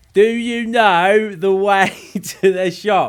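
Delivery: loud, slow, high-pitched yelling. Mimicking how British people address others abroad, mock yelling in English. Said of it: "start yelling in English".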